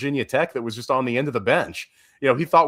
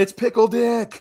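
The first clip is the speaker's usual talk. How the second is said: very high-pitched, taunting, rowdy yell; 9 semitones higher, 3 dB louder than usual. Retelling a taunt yelled at a soccer player: retelling a yell. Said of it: "we were yelling".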